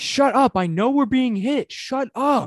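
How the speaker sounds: very high, shrill, anime-style yelling and screaming. Describing an anime show to a listener, imitating Deck screaming. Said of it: "He's just screaming".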